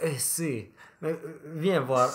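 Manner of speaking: put-on Spanish accent. Recalling playing a rich Peruvian at a party, speaker uses a fake Spanish accent. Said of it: "je parlais avec un faux accent espagnol".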